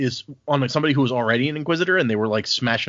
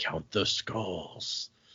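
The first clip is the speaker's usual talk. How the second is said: creepy, eerie, unsettling delivery; 6 semitones lower, 12 dB quieter than usual. Imitating how Dern will earn his coin: imitating Dern creepily. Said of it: "creepily being like".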